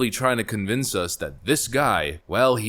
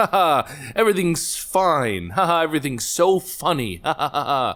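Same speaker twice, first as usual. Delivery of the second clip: forced, sarcastic cheeriness with fake laughing speech; 6 semitones higher than usual. Joking that humor masks the horror: fake cheerful laughing.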